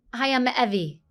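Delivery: pitch going down at the end. Demonstrating how to introduce yourself, with the pitch going down at the end. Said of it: "you always want to go down".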